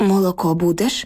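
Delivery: plain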